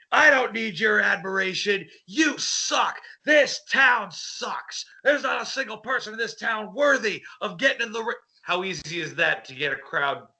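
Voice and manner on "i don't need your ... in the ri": pitched-up, taunting villain wrestler trash-talk voice. Showing how a villain gets a crowd to hate him: villain wrestler promo. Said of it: "You go out and say".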